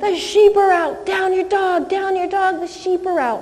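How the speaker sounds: screamed alarm, high-pitched. Retelling a fake alarm screamed at everyone during a break: retelling a scream. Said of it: "I just screamed".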